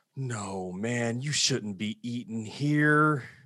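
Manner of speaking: slow under-the-breath mutter, barely out loud. Retelling what the manager said about a customer: imitating Steve muttering under his breath. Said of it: "said it under his breath".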